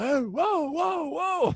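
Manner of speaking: mock stretched, high, drawn-out hollering yell. Retelling chasing a buck onto railroad tracks: retelling own yell.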